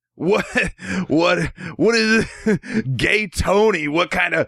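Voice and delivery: play-acted, very high, drawn-out, laughing incredulity. Retelling a guy's reaction to a game title: imitating a guy laughing in disbelief. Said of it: "I'm doing his voice".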